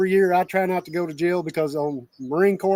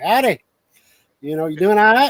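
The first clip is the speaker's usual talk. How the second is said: southeastern Kentucky accent, louder; 3 semitones higher, 6 dB louder than usual. Showing how a greeting sounds to Central Kentucky people: Southeast Kentucky accent. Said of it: "coming up from Southeast Kentucky".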